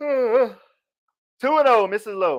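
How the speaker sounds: very slow, talking through a big yawn. A baseball commentator calling the count, yawning while speaking. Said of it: "I'm yawning".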